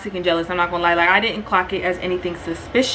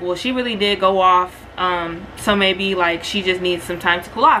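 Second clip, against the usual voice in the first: normal talking voice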